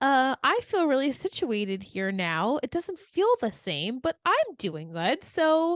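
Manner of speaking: breezy nonchalant tone. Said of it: "so nonchalantly was like".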